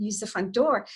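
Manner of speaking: normal talking voice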